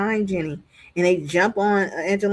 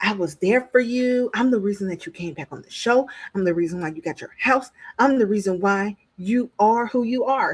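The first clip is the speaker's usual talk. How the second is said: mock, seething, boiling, angry rant. Retelling what a reality-show cast member said while still boiling: imitating someone boiling with anger. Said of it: "Angelina is still boiling".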